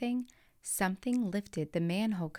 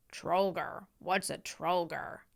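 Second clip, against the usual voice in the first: uncanny, eerie, spooky goblin voice. Reading a story, a goblin asking a question: eerie voice. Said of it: "asked with an eerie voice".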